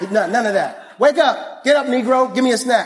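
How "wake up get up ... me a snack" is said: put-on bossy, blunt, demanding little kid voice. Retelling the daughter's blunt morning demand for a snack: imitating his demanding daughter. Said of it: "That's what she says".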